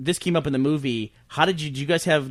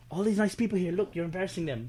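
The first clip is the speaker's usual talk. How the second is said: put-on South African Afrikaans accent; 4 semitones higher, 6 dB quieter than usual. Speaker retelling what an actor said to someone in front of others, Afrikaner accent. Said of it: "I can do the Afrikaner accent".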